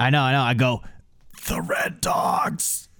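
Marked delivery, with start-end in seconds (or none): 1.5-2.8 dazed, knocked-out whisper, quieter. Whispering in character to another character while dying: dazed whisper. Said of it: "I whisper to Bill in my".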